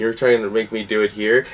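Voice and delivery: ordinary talk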